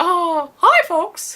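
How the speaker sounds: high, loud cartoon mouse voice. Retelling being asked while trick-or-treating in costume: Mickey Mouse voice. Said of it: "Do the Mickey Mouse voice".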